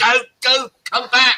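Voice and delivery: shrill, pleading, very high, drawn-out scream. Retelling screaming at the screen when someone walked off: imitating screaming at a screen. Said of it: "screaming at the screen".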